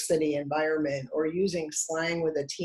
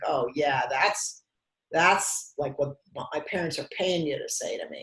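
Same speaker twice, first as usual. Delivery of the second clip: snarky, sarcastic, biting comeback tone. Retelling how a guarded young client answered kindness: imitating a sarcastic teenager. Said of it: "he would say something sarcastic like".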